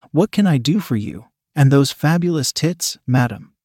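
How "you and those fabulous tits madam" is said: ordinary delivery, nothing marked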